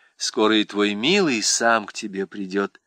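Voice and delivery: plain reading voice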